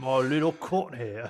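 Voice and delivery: put-on gruff cockney character voice. Discussing a show's seasons, doing a Billy Butcher voice. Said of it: "I'm getting really in my Billy Butcher voice".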